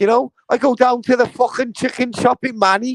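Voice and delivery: Liverpool accent. After claiming he does a really good Scouse accent, carrying on: Scouse accent. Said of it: "I do a really good fucking Scouse accent".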